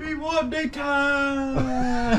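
mock voice, very high, slow and drawn out.

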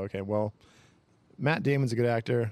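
ordinary delivery

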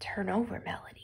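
breathy, very soft, near-whispered voice. Imagining how she might have said the line, very soft quiet voice. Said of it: "Sometimes she can make her voice really soft. Maybe she said it like this".

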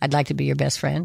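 usual speaking voice

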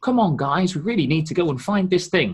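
hollow, cartoonish tone. Imitating a game's main character, voice acted like a children's cartoon: imitating an insincere cartoonish delivery. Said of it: "this sort of very insincere kind of".

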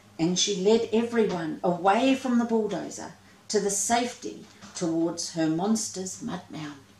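plain reading voice

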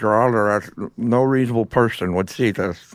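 put-on drawling Southern voice. Quoting a courtroom line: Woody Harrelson as Larry Flynt. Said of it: "he sounded like Woody Harrelson doing Larry Flint".

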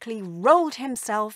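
ordinary delivery, nothing marked

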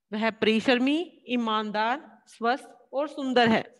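list read with a brief pause after each word. Reading a hindi sentence to show comma pauses: short pauses between listed words. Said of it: "इसमें जो हम हल्का हल्का ठहराव ले रहे हैं, थोड़ा थोड़ा सा रुकना".

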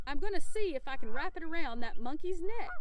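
plain reading voice

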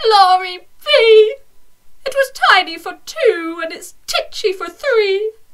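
put-on little old lady voice, high, crying out. Reading a rhyming story, the little old lady cries out: little old lady crying out. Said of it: "A little old lady lived all by herself".

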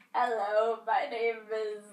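clumsy, bad put-on British accent. While shuffling cards, the speaker introduces themselves in a bad british accent. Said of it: "I'm so bad at a British accent".

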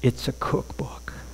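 hushed, trembling, shaky whisper. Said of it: "the cryptographer in a shaky voice says".

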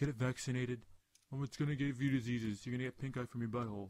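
fussy, paranoid, griping, complaining rant. Retelling how Sean reacted to the raccoon, imitating Sean complaining. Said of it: "He was bitching about how".

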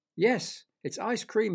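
high-pitched, laughing, said through a laugh. A narrator reads Derek after he tastes a piece of the window, laughing. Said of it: "he laughed".

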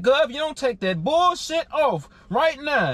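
ordinary talk

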